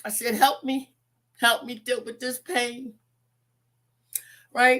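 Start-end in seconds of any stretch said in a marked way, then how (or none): 0.3-2.9 put-on tearful, crying pleading voice. Retelling crying out to God in pain, retelling a crying plea. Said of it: "And I cried out to my God".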